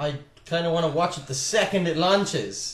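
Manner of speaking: slow, drawn-out sarcastic eagerness.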